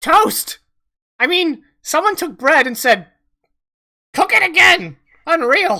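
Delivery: little, high, loud goblin creature voice. A small creature caught eating someone's toast speaks: high-pitched goblin voice. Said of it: "high pitched voice coming from underneath the table".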